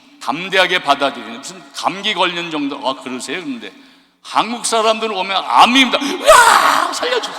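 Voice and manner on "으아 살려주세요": put-on very high, frantic, terrified, panicked squeal. Retelling how korean patients react on hearing they have cancer: mock panicked shriek. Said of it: "자지러진다는 거지".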